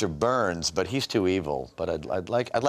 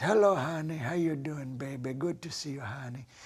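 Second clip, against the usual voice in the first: put-on elderly grandmotherly voice; 4 semitones higher, 5 dB quieter than usual. Retelling how his father's mother talked: imitating his grandmother's voice. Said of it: "And she'd talk like this".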